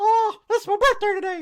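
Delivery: pitch going way up, very high and loud. Speaker marks Mickey Mouse's birthday, doing a Mickey Mouse impression. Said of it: "that's my impersonation of Mickey Mouse".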